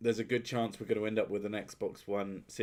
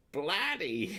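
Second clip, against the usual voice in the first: bloody in a fake American accent, pitched way up; 10 semitones higher than usual. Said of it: "even be attempted in American accent".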